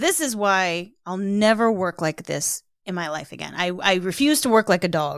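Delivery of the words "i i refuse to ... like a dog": ordinary talk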